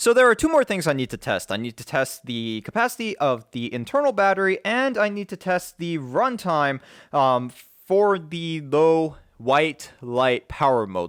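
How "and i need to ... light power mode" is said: really slow, deliberate, word-by-word delivery. Listing what is left to test, the speaker gets through a tongue twister very slowly. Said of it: "I had to say it really slow there".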